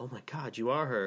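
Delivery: put-on panicked, freaking-out man's voice. Retelling the father seeing the crowd outside: imitating a panicked man. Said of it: "he freaks out".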